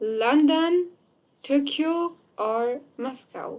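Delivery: rising London, Tokyo, falling Moscow. Teaching english intonation for a list of cities, rise on london, tokyo, fall on moscow. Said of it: "وقتی که ما لندن توکیو میگیم بالا میره مسکو پایان میاد".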